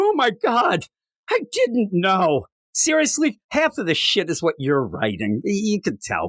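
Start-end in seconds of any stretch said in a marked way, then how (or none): 0.0-2.5 sarcastic put-on innocent surprise, swooping and drawn out. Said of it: "the idea that the editor's like".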